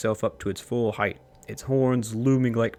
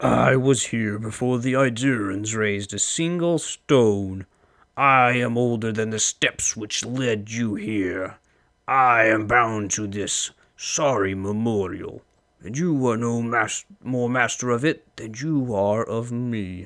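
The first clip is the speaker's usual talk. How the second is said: voice of a huge dragon; 4 dB louder than usual. Voicing a dragon addressing an intruder who has come into its place, dragon voice. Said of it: "emerges what can only be a dragon. / living Adra plates its hide, and the movement of its great joints is like the grinding of boulders. The dragon stretches itself up to its full height, its horns lo".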